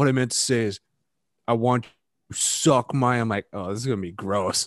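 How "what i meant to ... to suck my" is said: very slow, drawn out word by word. Retelling a dumb movie line, mimicking slow delivery. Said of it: "he said it so slow".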